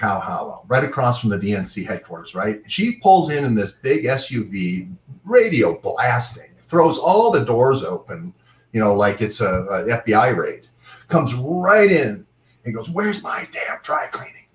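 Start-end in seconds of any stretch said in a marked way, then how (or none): 12.9-14.3 mock whispered half-scream. Retelling someone storming into a dry cleaner: imitating someone screaming. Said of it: "Like that, screaming".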